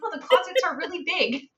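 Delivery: high, straight-faced, polite-sounding delivery. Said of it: "trying to keep a straight face and say".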